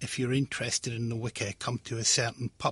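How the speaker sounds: plain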